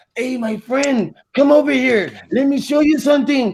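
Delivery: put-on Mexican accent. Speaker acts out calling people over so they think it's Spanish: put-on Mexican accent. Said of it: "they think that I'm talking to them in Spanish".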